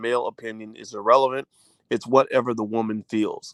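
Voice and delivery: ordinary talk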